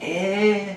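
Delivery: high, soft, unsure eh. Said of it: "and been like".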